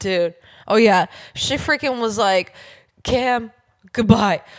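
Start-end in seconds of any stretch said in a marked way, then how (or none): 3.0-4.4 put-on caveman voice, louder. Retelling what a woman said, in a caveman voice. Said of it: "caveman voice".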